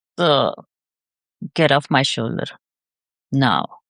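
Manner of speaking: earnest, serious tone. Retrying the coached line with seriousness instead of fierceness: serious command. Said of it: "fierceness is not my forte, but seriousness is".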